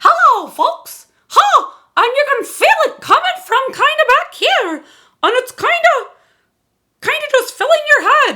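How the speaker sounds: cartoon-style voice. Showing a voice exercise: Mickey Mouse voice. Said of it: "let's start there with our Mickey Mouse sound".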